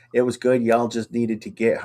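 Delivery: ordinary talk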